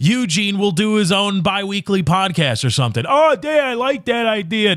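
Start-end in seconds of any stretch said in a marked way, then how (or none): 3.1-4.8 strained, pitched-up, throat-straining put-on voice. Acting out Eugene answering Dan's podcast idea: imitating Eugene's voice. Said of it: "kinda hurts to do that voice".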